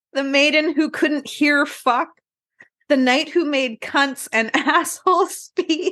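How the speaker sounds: cracking up, laughing through the words. Reading out filthy old tale titles on a history show, laughing while talking. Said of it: "I can't even say this without laughing".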